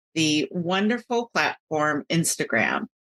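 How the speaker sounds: usual speaking voice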